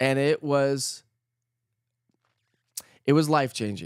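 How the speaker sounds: choked up, getting emotional. Speaker recalling a life-changing series made with kids after nine eleven: choked up. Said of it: "I'm getting all choked up here".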